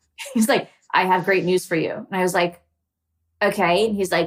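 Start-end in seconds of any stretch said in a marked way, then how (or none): 0.9-1.9 put-on flat, emotionless tone, lower pitch. Retelling a man calling her with great news; imitating a flat, emotionless tone. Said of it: "Literally like that".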